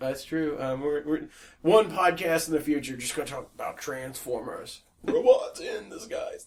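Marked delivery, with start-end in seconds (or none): 5.0-6.4 would-be cool, big robot voice, falling flat. Saying a Transformers slogan in a put-on voice: Megatron with a throat lozenge. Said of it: "That sounded like Megatron with a, with a throat lozenge".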